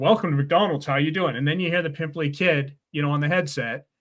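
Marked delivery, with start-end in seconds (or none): none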